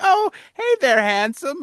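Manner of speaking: put-on super-nice, sweet, very high elderly woman voice. Speaker imagines an elderly woman greeting a passerby, imitating sweet elderly woman. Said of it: "an elderly woman that's just super nice to you".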